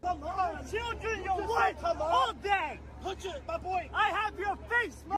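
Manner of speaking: very loud shouting at full volume. A man in a confrontation, shouting at full volume. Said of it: "That's about as loud as this voice can get".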